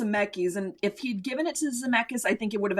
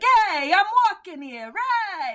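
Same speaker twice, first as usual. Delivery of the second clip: put-on loud New York accent with Italian tones; 9 semitones higher, 5 dB louder than usual. Describing what something sounded like to them, italian american new york accent. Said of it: "it sounded like an Italian American New Yorker going like".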